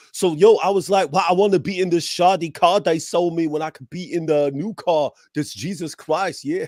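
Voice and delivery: put-on fast, rapid-fire street-style British accent.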